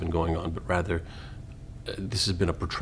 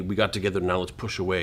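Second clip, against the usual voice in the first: plain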